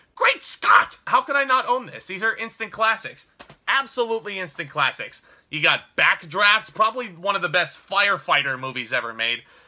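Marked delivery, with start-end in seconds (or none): 0.2-1.0 loud, breathy gasped-out delivery. Showing a movie collection, doing a quick Doc Brown impression. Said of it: "I gotta do the Doc Brown impression".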